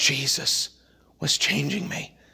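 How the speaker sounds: soft, hushed, breathy whisper.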